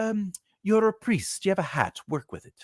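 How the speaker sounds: put-on English accent, slightly high. Retelling what a play director told an actor: imitating an English accent. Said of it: "spoke with an English accent".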